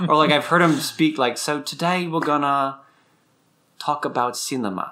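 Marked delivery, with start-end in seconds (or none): 1.4-4.9 put-on sudden switch to an American accent. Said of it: "he'll just switch accent, like, mid-sentence".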